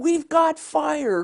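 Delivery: mock yell, high-pitched and slow.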